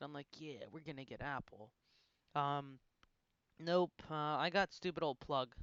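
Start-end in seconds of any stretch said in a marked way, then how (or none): 0.4-1.7 put-on excited, eager, worked-up, thrilled voice. Retelling own reaction as a buddy picked a free stock: imitating own past excitement. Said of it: "all excited".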